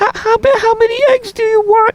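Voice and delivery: put-on very high, stumbling little old lady voice. Recreate the inside joke where Chris takes your egg order, in Chris's little old lady voice. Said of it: "Chris would act like a little old lady".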